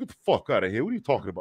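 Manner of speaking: put-on New York Queens accent. Retelling two drinking friends talking when their accents came out: imitating a friend's Queens accent. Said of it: "my homeboys got the Queens".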